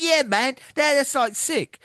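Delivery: mock thrilled, very high, excited English accent. Recapping a wrestling promo, the speaker acts out the video link, imitating Leon Slater's excitement. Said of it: "obviously with that accent".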